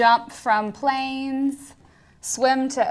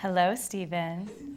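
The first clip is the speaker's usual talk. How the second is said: smooth, velvety, silky voice; 5 semitones lower, 8 dB quieter than usual. Bachelorette number 2 says hello to Stephen, silky smooth voice. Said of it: "that's silky smooth".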